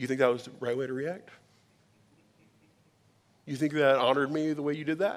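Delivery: mock, mild touch of sarcasm, pointed. Retelling how God answers a poor reaction: imitating God with slight sarcasm. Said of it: "speaks to me with a small touch of sarcasm".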